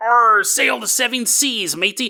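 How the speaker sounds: put-on stock movie pirate accent. Explaining where the pirate voice came from, the speaker demonstrates a pirate accent. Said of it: "The whole pirate accent".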